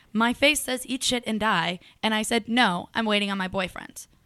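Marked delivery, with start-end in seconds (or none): 2.4-4.0 put-on flat, blunt, dismissive tone without cutesy lilt. Retelling what she said to a guy: acting out a flat blunt reply. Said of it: "Just like that. No cutesy inflection".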